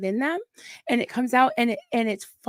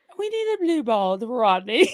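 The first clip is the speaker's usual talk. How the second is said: very proper, refined, upper-crust posh voice. Mimicking how the other speaker says a phrase, in a posh voice. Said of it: "You sound very posh".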